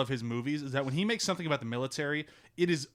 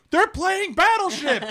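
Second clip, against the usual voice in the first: put-on sarcastic excited call, higher and louder; 10 dB louder than usual. Retelling hearing Chewie call out from the other room: imitating Chewie's sarcastic excitement. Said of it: "I was doing that sarcastically".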